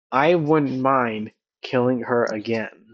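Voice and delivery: barely audible, hushed delivery. Voicing a character who speaks so only one player's character hears, barely audible. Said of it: "you hear him say j- just barely enough to where only Hugh can hear it".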